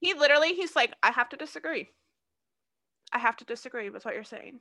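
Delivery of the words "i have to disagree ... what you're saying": mild, almost meek, acted-out calm delivery. Retelling how Jerry disagreed with the judges: imitating Jerry's calm meek tone. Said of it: "that's how he said it".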